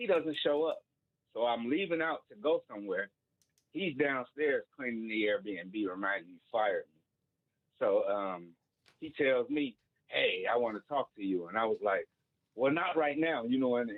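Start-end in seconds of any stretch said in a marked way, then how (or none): 12.6-13.4 put-on angry, pissed-off brush-off in raised tone. Retelling answering the man who fired them: retelling own raised angry tone. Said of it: "in a raised tone because I was pissed off".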